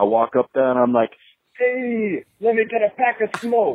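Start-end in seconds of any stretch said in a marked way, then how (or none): 1.6-3.8 put-on very high-pitched New York accent. Telling a bit about buying smokes at the corner store, in a New York accent. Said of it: "I got a 100% authentic New York accent".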